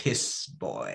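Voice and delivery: dead-serious, solemn, breathy, almost whispered. Retelling how Cantamani says the line: imitating Cantamani saying it seriously. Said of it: "Said so seriously".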